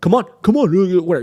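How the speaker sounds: high-pitched taunting yell. Retelling how a dog owner yelled in your face: imitating his yelling. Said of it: "yelling at me like".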